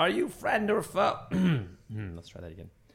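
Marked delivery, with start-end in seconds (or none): 0.0-1.2 very high, loud, challenging shout. Voicing Salarin calling out to him while others stand ready, yelling as Salarin. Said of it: "Salarin would just yell out to him".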